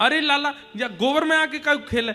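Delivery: high, fond, motherly scolding tone.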